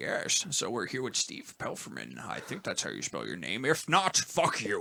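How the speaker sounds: breathy, half-whispered film-star voice. Asked to show it off, introduce the guest in a Sean Connery impression. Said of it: "I could do a pretty spot on Sean Connery impression".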